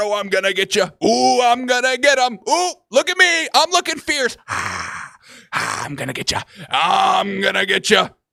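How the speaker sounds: play-acted tough-guy taunting, stern. Imitating fighters at a face-off: mock stern face-off trash talk. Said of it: "The face-offs mean stern".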